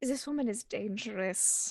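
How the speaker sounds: quiet low voice. Warning a companion about an arriving woman: said quietly in character. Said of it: "I'll just quietly say in Hindi".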